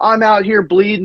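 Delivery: high yell. Retelling a fight heard from the next room at night: imitating someone yelling. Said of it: "she's yelling".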